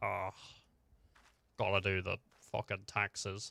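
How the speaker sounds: bored, low monster voice. Trying out a dragon voice for fun that sounds like a bored accountant. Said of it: "Sounds like a bored accountant".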